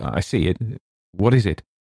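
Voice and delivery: ordinary delivery, nothing marked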